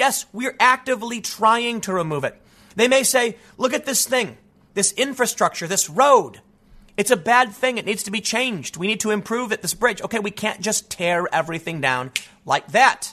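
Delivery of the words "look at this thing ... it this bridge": ordinary talk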